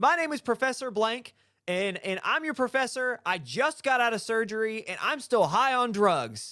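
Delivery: put-on booming lecturer voice. Imitating a professor introducing himself to students over the microphone, booming professor voice. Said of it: "booming voice".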